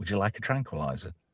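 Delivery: sly, coy, hushed little half-whisper. Retelling a film scene: imitating McCoy's coy half-whisper. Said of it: "McCoy just coyly whispers to Kirk".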